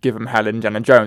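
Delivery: ordinary delivery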